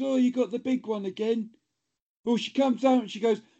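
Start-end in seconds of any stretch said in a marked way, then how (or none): none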